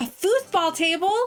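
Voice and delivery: popped out sharply at a high pitch. A speaker thinking out loud, shouting. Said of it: "I just shouted".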